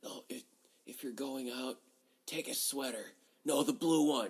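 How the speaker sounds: faint, weak, barely audible, barely coherent whisper. Retelling a half-conscious mother talking to her son: imitating someone whispering weakly. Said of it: "whispering so low you almost can't even hear it".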